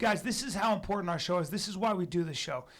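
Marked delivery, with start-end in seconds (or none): none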